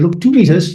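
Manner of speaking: fierce, ferocious, curt, abrupt snap. Retelling how a woman in a queue turned back abruptly: imitating a ferocious snap. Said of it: "I thought that was very ferocious".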